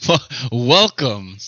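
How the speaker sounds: booming, very loud news-anchor voice. Opening the recording with a catchphrase, the speaker uses a newscaster voice. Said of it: "like a newscaster voice".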